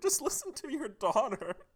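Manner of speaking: very high, tearful, breaking-down sobbing voice. Voicing a daughter pleading with her dad: acting a tearful plea. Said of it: "she starts breaking down in tears".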